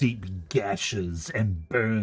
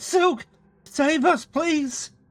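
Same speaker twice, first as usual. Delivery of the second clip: very high, shrill, desperate screaming cry; 5 dB louder than usual. During a game session, the narrator voices two characters calling for help, screaming plea. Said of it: "Fiery and Saturn scream out and go".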